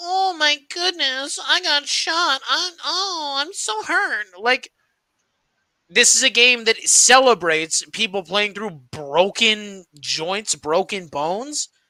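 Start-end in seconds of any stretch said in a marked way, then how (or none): 0.0-4.3 very high, drawn-out, whiny, hurt-sounding moan. Mocking players who fake injuries for calls: mocking a whining player. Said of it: "players just go".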